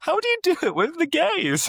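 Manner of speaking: very high, giggle-laced, swooping speech. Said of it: "she was trying to do it and laughing".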